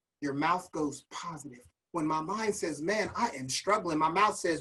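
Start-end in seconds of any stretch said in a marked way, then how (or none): none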